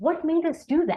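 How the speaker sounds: open, inquisitive tone. Coaching the tone of a question, curious versus why: curious tone.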